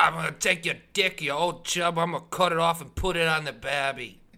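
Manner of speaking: bad put-on Australian accent, very high and shrill. Acting out what a wasted man might say, bad Australian accent. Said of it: "Wait, that's British".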